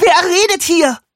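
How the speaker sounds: high, piercing, shrill, loud scream. A narrator reads a character reacting to a voice from the sink, screaming. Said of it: "Lou schrie".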